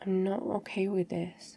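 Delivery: soft, slow, sorrowful and heavy-hearted. Speaking to someone who tried to protect their feelings, sounding sad.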